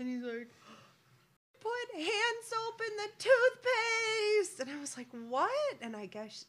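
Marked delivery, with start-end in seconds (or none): 1.6-4.6 very high, loud, drawn-out, distressed, very upset voice. Retelling what one of the boys said coming downstairs, acting out very upset. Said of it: "very upset".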